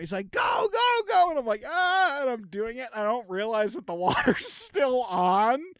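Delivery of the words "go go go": put-on, shrill, very high, loud yelling. Retelling how a man yelled at the speaker while cutting a pipe, imitating his yelling. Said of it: "he's yelling at me".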